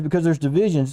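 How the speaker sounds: ordinary talk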